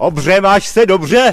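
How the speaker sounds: high, slow, loud calling voice.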